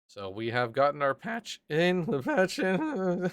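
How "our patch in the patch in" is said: voice breaking mid-sentence, cracking up high. Live on stream, telling everybody the patch is in, voice cracking. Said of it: "Don't know why my voice broke there".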